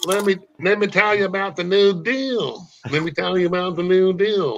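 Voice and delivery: high-pitched, nasal talk, pinched up. Showing how Ross Perot talks: Ross Perot impression. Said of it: "he kinda talks like this".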